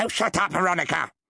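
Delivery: curt, sharp, snapping delivery. A man cuts off a woman who is contradicting him, sharply. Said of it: "said Randolph sharply".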